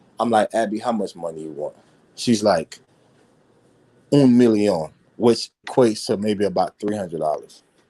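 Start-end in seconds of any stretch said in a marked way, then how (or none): 0.5-1.8 mock low, simmering anger kept in check. Retelling confronting someone about money while trying to compose himself: retelling suppressed fury. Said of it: "I'm fuming, man. I'm fuming".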